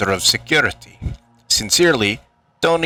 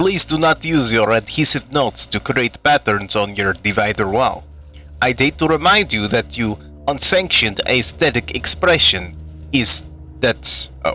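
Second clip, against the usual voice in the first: put-on Russian accent. Reading a game note aloud in a put-on Russian accent. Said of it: "I'll do it in Russian".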